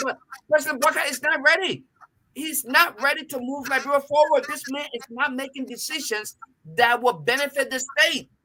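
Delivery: high, irritated, worked-up, emotional delivery. A speaker criticizing the president, apologizing for sounding annoyed and emotional. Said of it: "I'm sorry that I sound so annoyed and emotional".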